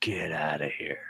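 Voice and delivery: low, hushed, full-on horror-movie voice. Recounting the trench coat figure reaching them, the speaker repeats what a voice said, real low horror-movie voice. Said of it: "a real low voice or a telepathic voice went".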